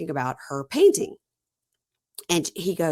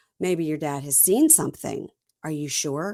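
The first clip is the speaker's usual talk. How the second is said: usual speaking voice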